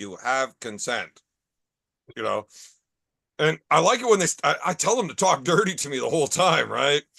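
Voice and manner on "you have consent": low, soft, synthesized robot voice. In a crude joke, a wheelchair's speech device speaks in a robot voice. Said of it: "you hear the robot voice saying".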